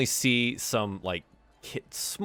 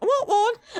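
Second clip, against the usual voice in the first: put-on young girl voice, higher and louder; 5 dB louder than usual. Voicing a masked little girl asking the players for a candy apple: little girl voice. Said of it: "probably a little girl".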